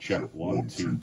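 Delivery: low, whispered demonic voice effect. Testing the vocal modulator set to Satan voice: Satan voice effect, nice and low. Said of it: "I think it's set the Satan voice right now".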